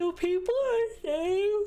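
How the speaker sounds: talking through a yawn. Speaker asks what people are saying, yawning. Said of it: "I'm yawning".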